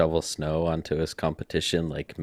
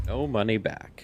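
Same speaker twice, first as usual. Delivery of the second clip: pitched-up traditional commercial narrator voice; 5 semitones higher, 3 dB quieter than usual. While showing something, the speaker narrates a traditional commercial: commercial narrator voice. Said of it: "I even put on my narrator voice".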